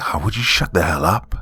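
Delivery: hiss spoken close to the ear. Reading a story, the narrator tells the guide to stop talking: loud hiss. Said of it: "I hissed loudly in her ear".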